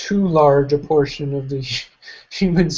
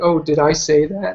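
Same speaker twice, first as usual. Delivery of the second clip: mock feigned-innocent tone, ambiguous. Describing someone's manner of speaking: imitating an ambiguous feigned-innocent tone. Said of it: "he'll say something and be like".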